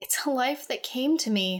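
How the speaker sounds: muttered under breath. A woman answers Philip, who has just called her a slaver, under her breath. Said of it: "she said under her breath".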